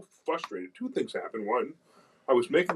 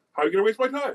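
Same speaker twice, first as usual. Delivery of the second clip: acted-out, high, angry voice; 8 semitones higher, 4 dB louder than usual. Retelling a call with a girl from Capitol Grill, retelling an angry retort. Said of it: "And I was really angry".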